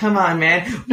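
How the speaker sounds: silly put-on cat voice. Remembering mid-conversation to switch into his put-on cat voice. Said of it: "I forgot to do my cat voice".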